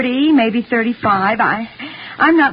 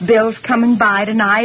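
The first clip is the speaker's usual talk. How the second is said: ordinary delivery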